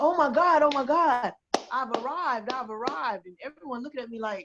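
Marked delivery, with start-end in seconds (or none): 0.0-3.3 put-on slow, long, drawn-out, stretched scream. Retelling seeing female boxing on tv at a friend's house: retelling her own screaming. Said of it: "I started screaming".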